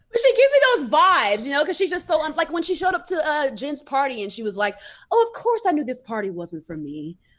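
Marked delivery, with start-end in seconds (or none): 5.1-7.1 put-on British accent. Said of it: "Meredith Marks does not have a British accent".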